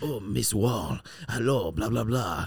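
put-on Spanish accent on every word. Retelling how Abel flopped on the ground and spoke to Miss Wall: Abel's put-on Spanish accent. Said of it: "He starts speaking like this".

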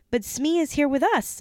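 high, urgent cry in a protesting tone. During the game of Smee, the narrator cries out to the others. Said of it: "I cried".

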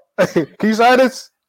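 play-acted, very high, very slow, overloud drawn-out talk. Acting out asking a customer to sign while wearing headphones: pretend talking too loud. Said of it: "I'll probably be talking so loud".

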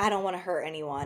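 soft, hushed, barely-there half-whisper. Retelling what a dating-show contestant said to his date: imitating Ashton Taylor half-whispering. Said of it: "why are you whispering?".

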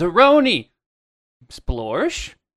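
loud call carried across a distance. Playing their character, the speaker calls out to zeroni: yelling out a name. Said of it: "I'm going to yell out to Zeroni".

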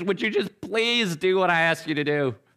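begging, pleading voice. Retelling what it is like with the kids: imitating own pleading.

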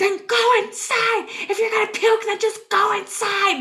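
put-on, very high, fed-up, exasperated voice. Retelling what the speaker said after losing all patience, retelling impatient words. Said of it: "have lost all patience at this point".

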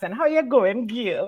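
accent from Trinidad. Greeting someone on the show to show off a Trinidadian accent. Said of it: "Let me give you my Trini accent".

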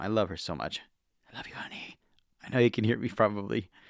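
hushed, low volume. Talking so the girlfriend asleep in the other room isn't woken, speaking quietly. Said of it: "If I sound a bit quieter".

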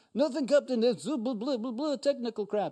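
high-pitched, put-on Russian accent. Retelling a Star Trek scene, the engineer answering the captain, Scotty in a Russian accent. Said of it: "I just switched into the Russian dude".

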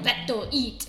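simple, broken caveman speech. Describing how a character was imagined to speak, caveman talk. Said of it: "talking like a caveman".

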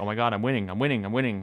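put-on excited panic. Retelling a viral clip of the other speaker winning a tournament: imitating someone freaking out. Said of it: "freaking out".

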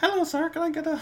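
put-on very high, small, childlike ten-year-old kid voice. Joking about someone getting weed at age ten, in a ten-year-old kid voice. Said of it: "That was my 10-year-old voice".

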